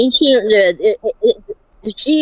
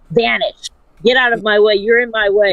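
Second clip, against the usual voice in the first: normal talking voice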